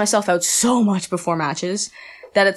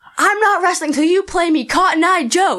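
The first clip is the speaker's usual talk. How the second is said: put-on, very high, shrill hollered yell; 11 semitones higher, 4 dB louder than usual. Retelling yelling at a WWE wrestler from the edge of the ring, retelling a yell. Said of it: "And I'm just yelling".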